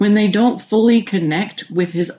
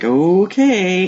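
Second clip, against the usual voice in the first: put-on wary, hesitant, uncertain tone. Retelling a request for help avoiding sugar, the speaker imitates a hesitant reply. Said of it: "he's a little hesitant like".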